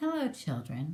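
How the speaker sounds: sweet-voiced tone, all kindness. Narrating a story, someone greets the children in a sweet voice. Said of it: "someone said in a sweet voice".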